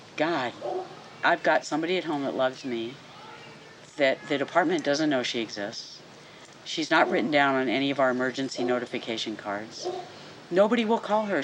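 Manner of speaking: usual speaking voice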